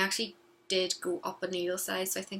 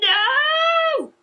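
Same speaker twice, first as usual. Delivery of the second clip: put-on child tantrum scream, much higher and louder; 15 dB louder than usual. A mother re-enacts her child refusing a knitted item, imitating a child screaming.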